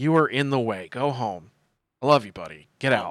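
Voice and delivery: blunt, brusque voice. Voicing a character telling a friend to leave: rude, blunt dismissal. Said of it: "don't be rude about it".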